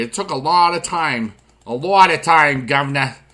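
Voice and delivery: very bad, put-on mixed Boston and English accent. Addressing the audience, slipping into a bad Boston-English accent. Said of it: "the world's worst Boston slash English accent ever".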